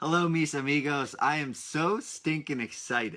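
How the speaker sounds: slow, excited delivery with audible smile. A host opens an episode for young lifelong learners, smiling while talking. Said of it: "I know you can hear the smile in my voice".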